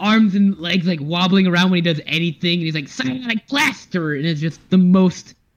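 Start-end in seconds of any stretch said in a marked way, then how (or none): 2.9-4.1 high, goofy, nasal, nerdy voice. Praising the voice acting, quoting MODOK in a goofy nasally MODOK voice. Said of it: "goofy, nasally, nerdy voice ever".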